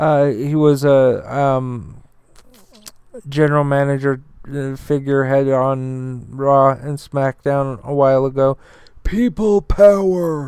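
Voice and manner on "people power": higher pitch with the word "power" drawn out. Describing a former general manager, then imitating how he talks: John Laurinaitis impression. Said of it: "the guy that talks like this".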